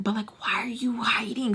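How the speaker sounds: hushed whisper. Retelling the friend on the phone asking again: imitating someone whispering. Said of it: "So she's whispering too".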